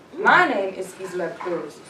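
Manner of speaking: slow, firm, set, measured tone. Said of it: "a grown woman who has a first and a last name".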